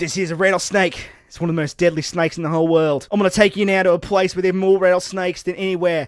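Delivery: loud, fast, rattled-off bad Australian accent. Retelling Steve Irwin holding a rattlesnake, bad Steve Irwin impression. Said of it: "your Australian accent sort of fell apart there".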